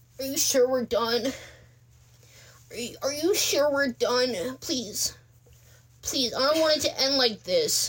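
high voice, full of pleading. Retelling an ex-boyfriend's call after the breakup: imitating an ex pleading. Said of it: "my best impression of that moment".

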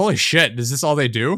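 ordinary talk

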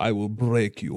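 Russian-accented voice. Recalling morphing into a movie boxer when drunk, doing an Ivan Drago impression. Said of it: "was it Ivan Drago? ... From Rocky".

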